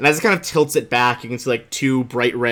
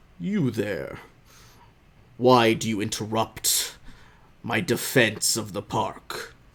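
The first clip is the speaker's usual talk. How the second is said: very deep, soft creature voice rumbling in the head; 5 dB quieter than usual. A towering being kneels to question a much smaller one: very deep Iwaliwa voice. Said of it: "you hear like a very deep voice".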